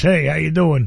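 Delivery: put-on Jersey accent. Retelling how a man greeted the speaker in Texas, in a Jersey accent. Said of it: "Jersey accent".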